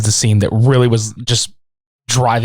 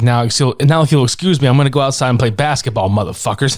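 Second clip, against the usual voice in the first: plain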